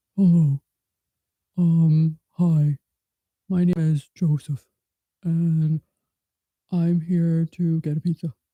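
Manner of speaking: put-on man's voice. Playing with different voices, pretending to be a man: pretend man's voice. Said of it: "let's pretend I'm a man".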